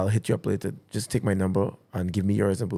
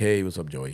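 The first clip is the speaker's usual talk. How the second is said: put-on low, deep-voiced Canadian accent; 4 semitones lower than usual. Retelling a phone call from a manager, imitating his deep Canadian accent. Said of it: "Guy had a deep voice, Canadian accent".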